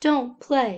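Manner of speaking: ordinary talk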